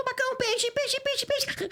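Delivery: very high, adorable, little cartoon voice. Speaker re-creates the test voice sent for approval, in a cute character voice. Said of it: "Então ficou fofinho".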